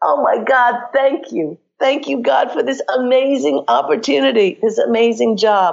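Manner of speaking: high, joyful, exuberant, overjoyed scream.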